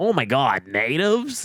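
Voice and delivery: very slow, drawn-out put-on American accent. Speaker mimicking how Americans say the word, imitating an American accent. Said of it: "hearing an American accent go".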